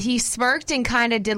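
ordinary talk, nothing marked

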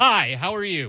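mock blunt, pushy, aggressive, loud voice. Retelling how a neighbor greeted the speaker: imitating a loud greeting. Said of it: "did it real loud".

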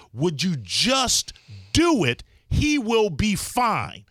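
acted-out loud delivery. Retelling what the speaker finally said to her, retelling a loud request. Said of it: "enough loudness in my voice".

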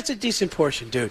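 ordinary talk

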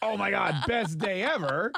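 drawn-out, over-eager, overly enthusiastic excited gushing. Teasing another speaker for reporting too happily: imitating someone overly enthusiastic. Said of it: "you don't have to be so enthusiastic".

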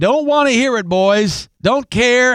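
put-on distinctive Southern American accent, pitched a bit high. Retelling what a man told the boys on the baseball field, in southern accent. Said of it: "with that distinctive southern accent".

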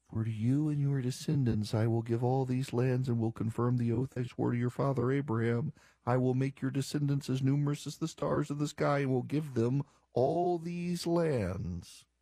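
acted mumbling. Speaker imitates her reading the passage aloud, shifting into acting out mumbling. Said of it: "And then mumbles".

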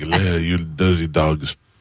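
put-on flamboyant old man voice with French accent.

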